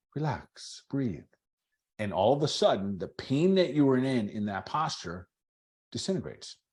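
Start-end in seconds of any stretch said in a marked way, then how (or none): 0.1-1.2 sweet, nice, coaxing, soothing voice. Speaker imitates a yoga teacher coming over during a posture, imitating a nice, sweet voice. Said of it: "in a nice, sweet voice and be like".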